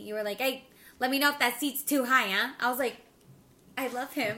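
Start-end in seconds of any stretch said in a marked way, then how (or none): 0.4-2.5 loud put-on New York dad accent. Speaker quoting the listener adjusting the kids' bike seats, in a dad New York voice. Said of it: "bust it out with that dad New York voice".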